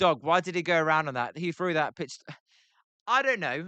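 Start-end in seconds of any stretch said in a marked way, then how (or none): none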